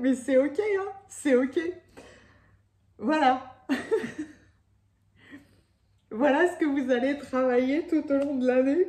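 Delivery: voice close to breaking, on verge of crying. Speaking to the audience with tears in the eyes: tearful voice. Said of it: "J'ai les larmes aux yeux".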